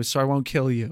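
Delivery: ordinary delivery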